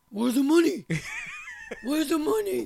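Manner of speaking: very high, loud, mock demanding shout.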